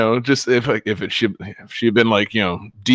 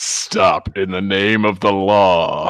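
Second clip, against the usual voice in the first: put-on robot voice, lower pitch; 3 semitones lower than usual. Imitating the female robot cop as voiced by Peter Weller: Peter Weller RoboCop voice. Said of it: "the cute little female robot cop as voiced by Peter Weller".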